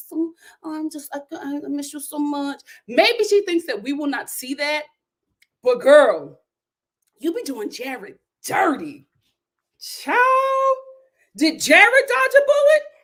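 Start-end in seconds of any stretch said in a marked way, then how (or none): 0.1-2.6 mocking put-on little voice, slower. Mocking a woman who flirts with the listener, imitating her little voice. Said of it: "speaking in her little voice".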